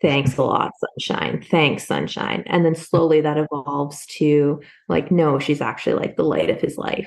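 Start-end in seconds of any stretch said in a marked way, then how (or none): 0.0-2.4 play-acted, heavy, very sarcastic tone. Quoting a man in a book calling her Sunshine, acting out sarcasm. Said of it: "he calls her Sunshine in a very sarcastic tone of voice".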